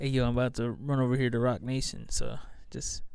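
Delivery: quiet, hushed, confiding voice spoken very close. Retelling what someone whispered to a kid: imitating someone whispering. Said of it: "whispered in the kid's ear".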